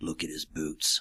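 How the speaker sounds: really low, harsh voice with a grim edge. The captain answers Baller's question of how he knew, really low, harsh voice. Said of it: "in this really low, kind of harsh voice".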